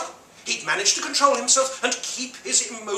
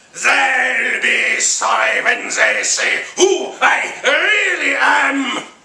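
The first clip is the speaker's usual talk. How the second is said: rough, rasping, loud monster growl; 7 dB louder than usual. Narrator reading Krampus's line in a story, growling Krampus voice. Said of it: "he growled".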